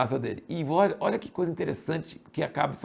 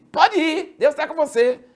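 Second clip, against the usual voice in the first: high, loud tone with heavy irony. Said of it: "ele fez em tom irônico".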